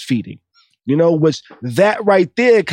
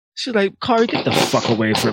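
ordinary talk

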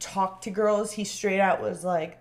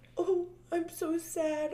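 mock fake sobbing, higher pitched and quieter; 9 semitones higher, 8 dB quieter than usual. Retelling someone's apology after she was sent home, imitating fake crying. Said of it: "the fake cries of".

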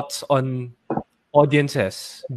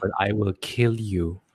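mock calm menacing tone, lower and quieter; 5 semitones lower, 7 dB quieter than usual. Describing how a villain talks, imitating a very calm threat. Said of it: "Yung talagang sobrang calm niya".

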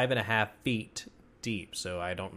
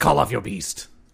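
unnaturally deep growling character voice; 9 dB louder than usual. Game narrator voices a character speaking to the players, in an unnaturally deep growling voice. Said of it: "his voice is unnaturally deep. Like growling".

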